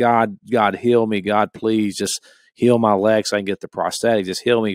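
acted-out, imitated pleading, begging voice. Retelling how a man whose leg would not heal begged God, retelling begging God. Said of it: "and I'm begging God".

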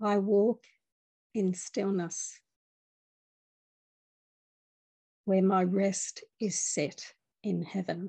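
slow, deliberate, unhurried reading, each word placed. Reading a passage aloud, reading slowly. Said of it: "I'm just going to read it slowly".

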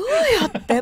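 high-pitched, loud, baffled tone.

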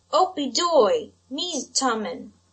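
loud, slow, very drawn-out, impatient little voice. A little voice calls out through the rattling door, impatient little voice. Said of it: "a little voice was heard saying impatiently".

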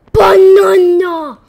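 desperate, high, loud gasping cry.

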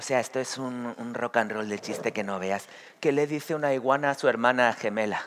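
laid-back, relaxed rocker-style voice.

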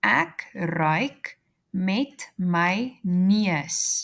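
very slow, drawn-out, repeated delivery.

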